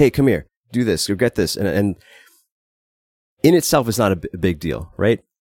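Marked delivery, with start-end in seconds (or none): 0.0-1.6 mock bossy, commanding order-giving voice. Describing how she talks when tired, imitating a commanding tone. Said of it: "she'll speak in a kind of commanding tone like".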